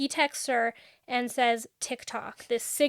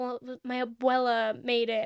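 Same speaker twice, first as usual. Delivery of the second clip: put-on mumbling voice. Retelling what someone said with his head in his hands: imitating someone mumbling.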